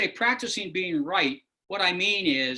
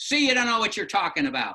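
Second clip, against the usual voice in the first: aggrieved, upset, accusing tone; 3 semitones higher than usual. Role-playing a phone call with a complaining caller: upset caller Robert. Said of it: "let me do a little Robert on the phone".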